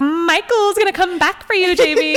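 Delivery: high, loud, spooky, teasing, taunting voice.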